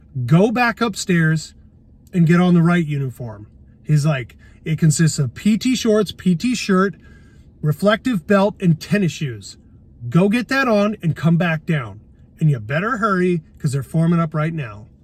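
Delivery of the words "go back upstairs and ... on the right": usual speaking voice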